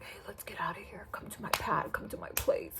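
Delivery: breathy whisper, very quiet, right at the ear. Retelling what a guy kept saying in the speaker's ear: imitating a whisper. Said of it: "he's still whispering up in my ear".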